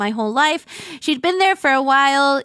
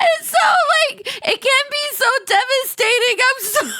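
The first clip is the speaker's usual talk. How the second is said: very high, weepy words spoken through tears; 12 semitones higher than usual. Talking about losing pets, another speaker says not to cry: crying while talking. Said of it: "Don't cry".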